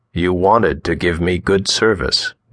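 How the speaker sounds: usual speaking voice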